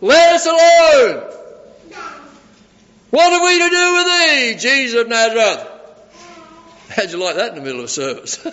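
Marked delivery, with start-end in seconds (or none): 0.0-5.7 shrill, very high, very loud demonic shriek. Retelling a scripture scene where a demon interrupts a teaching, with a loud demon cry. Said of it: "this demon cries out with a loud voice".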